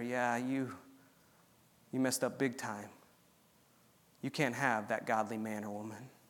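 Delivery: put-on whisper. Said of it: "he whispers in your ear".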